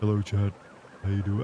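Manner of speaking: very low, deep put-on voice, pushed down. Streamer tries out an even lower voice for chat: very low deep voice. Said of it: "Would you like that if I went even lower".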